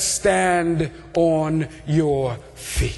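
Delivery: low, very slow, solemn and commanding godlike voice.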